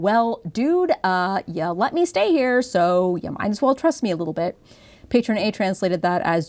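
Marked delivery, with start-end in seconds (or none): 0.0-4.6 mock knowing, sarcastic tone. Acting out a character's line to show its tone: acting sarcastic. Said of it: "she really is being kinda sarcastic and like".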